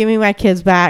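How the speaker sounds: usual speaking voice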